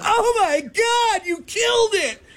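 mock very high, stretched-out, drawn-out scream. Retelling a woman's reaction when a goose was hit: imitating a woman screaming. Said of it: "The woman lets out a scream".

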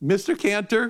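put-on high-pitched voice of a nine-year-old girl. Retelling a phone call, the speaker imitates Shayna's high-pitched 9-year-old voice. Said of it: "in this high-pitched 9-year-old voice".

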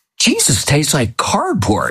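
acted-out, blunt, blurted, high and swooping. Retelling what she said with the host in her mouth: very loud. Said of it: "she said very loudly".

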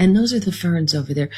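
public radio host voice. Describing an hour-long NPR show about ferns, the speaker does an NPR host voice. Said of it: "speak like this".

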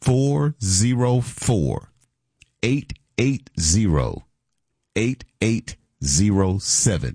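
very slow, deliberate pace. Co-host giving the listeners the phone number, very slow. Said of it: "I'm going to give you the phone number real slow".

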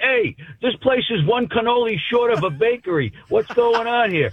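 put-on very high, heavy New York Brooklyn accent. Retelling what a passerby said after looking into a room; very New York Brooklyn accent. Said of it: "in a very New York Brooklyn accent".

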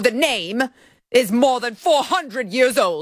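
put-on haughty British accent.

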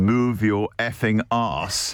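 synthetic digital machine robot voice. Recalling the restaurant's talking robots, quoting one in a digital robot voice. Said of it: "digital voice".

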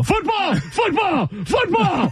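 high, shouted football broadcast announcer call. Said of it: "you sound like the Bears, broadcast. Tom Thayer".

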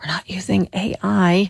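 whispered voice.

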